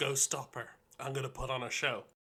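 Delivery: whispering. Whispering in character to Lumpus to go stop her: whispering. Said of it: "I'm gonna whisper to Lumpus".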